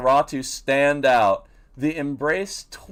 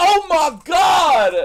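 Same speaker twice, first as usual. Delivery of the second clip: very high, loud shrieking scream, God drawn out; 13 semitones higher, 7 dB louder than usual. Retelling a game scene where a woman faints: imitating a woman screaming. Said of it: "pass out after screaming".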